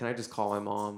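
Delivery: plain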